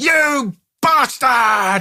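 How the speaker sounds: high, drawn-out, shouting yell.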